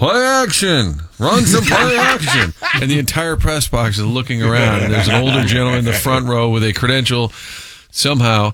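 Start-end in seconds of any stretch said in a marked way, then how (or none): 0.0-2.5 slow, high, swooping, drawn-out hollering yell. Retelling a yell from the Mizzou press box: imitating Skip Irwin yelling. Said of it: "Like Skip Irwin would yell".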